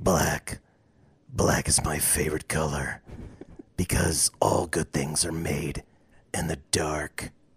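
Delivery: very low, hushed, quiet dark-hero voice. People are taking turns showing off their impressions; take your turn in a Batman voice. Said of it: "was that Will Arnett".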